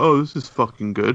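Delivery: mock snarky, sarcastic jab. Quoting people's comments about the catalogue, mock-sarcastic comment. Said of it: "sarcastic comments like".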